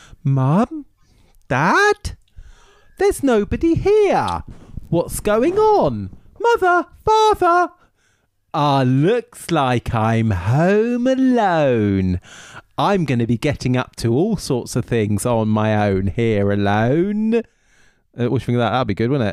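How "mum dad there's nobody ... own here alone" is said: put-on very slow, swooping English child-actor voice. Doing an impression of an English child actor from Home Alone. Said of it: "I'll do my best English child actor impression".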